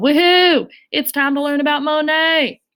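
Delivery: put-on cowboy voice. Speaker starting a lesson about Monet for the group: cowboy voice. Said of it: "Don't know why I did my cowboy voice for that".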